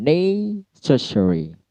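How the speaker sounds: necessary with first syllable ne hit hard. Word stress lesson on English vocabulary: stress on ne in necessary. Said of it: "Kalau necessary itu ne-nya yang diberikan stressing".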